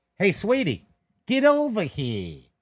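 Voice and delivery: put-on loud, swooping, full-on New York Brooklyn accent. Speaker quotes what a woman told them, in a brooklyn accent. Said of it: "because we talk in Brooklyn accents".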